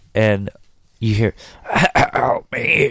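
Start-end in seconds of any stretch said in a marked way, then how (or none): 1.7-3.0 high, gurgly, creepy rasping voice. Retelling a scene, the speaker voices a man turning into a creature, gurgly. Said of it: "his voice is all gurgly".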